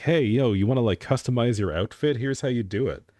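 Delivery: put-on high, casual alt girl influencer voice. Retelling a YouTube shorts video: imitating an alt girl YouTuber. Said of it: "this one random alt girl in my YouTube shorts who's like".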